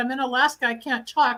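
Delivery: ordinary talk, nothing marked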